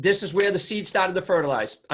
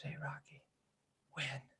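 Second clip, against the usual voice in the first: very quiet, hushed, frightened whisper; 2 semitones lower, 21 dB quieter than usual. Retelling a film scene where Adrian speaks to Rocky in hospital: imitating a whisper. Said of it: "she whispers".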